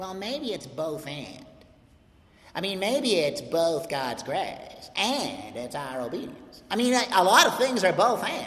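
tongue-in-cheek, facetious, mocking put-on voice. Speaker teaching on Paul's first chapter, voicing the both-and view in a mock facetious voice. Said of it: "that's a facetious voice".

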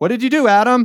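high, loud scolding voice. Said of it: "God's like".

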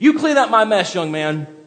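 high-pitched, loud, angry scolding voice.

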